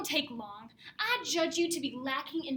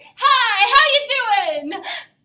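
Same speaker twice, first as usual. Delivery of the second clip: booming, very loud, slow, drawn-out, cocky and swaggering; 5 semitones higher, 12 dB louder than usual. Showing how to say a greeting with more swagger: swaggering greeting. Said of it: "now swagger a bit".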